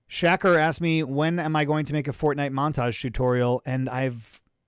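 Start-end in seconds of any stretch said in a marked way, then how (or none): none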